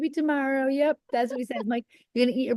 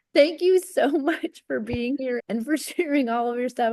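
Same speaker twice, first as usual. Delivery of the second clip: warm speech breaking up with laughter. Thanking a guest for coming on and sharing, laughing while talking. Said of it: "I'm sorry I'm laughing".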